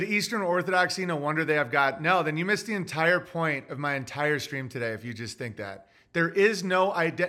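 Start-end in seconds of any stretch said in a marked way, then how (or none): none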